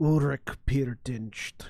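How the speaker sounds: deep voice with slight modulation. Voicing a figure who answers with only a name: deep, slightly modulated voice. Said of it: "this deep, slightly modulated voice that comes out".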